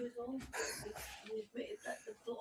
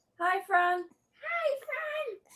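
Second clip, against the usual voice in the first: raised voice, higher and louder; 5 semitones higher, 10 dB louder than usual. Repeating a greeting after being asked to speak louder: louder. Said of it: "you have to say a bit louder".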